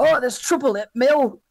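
put-on glum, fed-up, miserable northern accent. Describing a northern coworker who loves being miserable, imitating a miserable northern coworker. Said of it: "That was a good impression".

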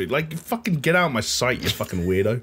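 ordinary talk, nothing marked

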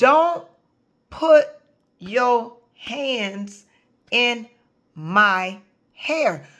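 each word hit separately, every word stressed.

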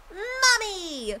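put-on irritating young animal voice. Showing off character voices to an audience, doing Monotaro's voice. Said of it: "the little fucking cub. The one that kept calling Mew Mommy".

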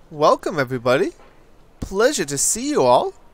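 voice cracking. Streamer greeting viewers as they join the stream, voice cracking. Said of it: "my voice just cracked there".

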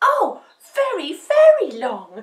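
very loud, swooping, drawn-out, eager excited cry. Narrator reads Dumpling answering the witch's cat's question: crying out excitedly. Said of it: "cried Dumpling excitedly".

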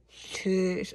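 slurred, strained speech. Trying to say a word with new braces on: struggling to say cheese with braces. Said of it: "I can't say cheese".

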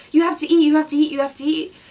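insistent, loud screaming, same words repeated. Recounting a stranger shoving a granola bar in their face, imitating her screaming. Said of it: "like screaming like".

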